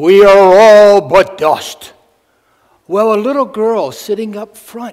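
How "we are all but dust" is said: mock grave, solemn, loud, drawn-out pulpit voice. Telling a joke, the speaker quotes a pastor opening his sermon: retelling a solemn, loud line. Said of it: "in a very solemn but loud voice".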